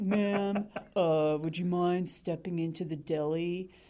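put-on heavy, thick New York accent, laid on, drawn out. Retelling what a guy behind her said: thick New York accent. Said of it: "in this like thick New York accent".

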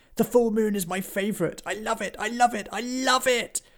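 gentle, gleeful, gushing howl, very high. Reading a story aloud, voicing Woody the werewolf howling with joy. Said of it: "Also, [name] was always gentle and sensitive, rarely showing the terrifying aggression that most expected from werewolves".

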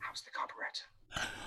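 hushed, very quiet, breathy whisper. Recounting a therapist leaning over with tea, retelling a very quiet whisper. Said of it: "she just very quietly whispered".

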